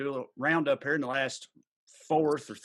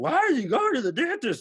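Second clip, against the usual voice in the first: silly, very high, swooping put-on clown voice; 12 semitones higher, 5 dB louder than usual. Retelling how he asked Katie about the dentist, the speaker quotes him in a clown voice. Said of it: "in a clown voice".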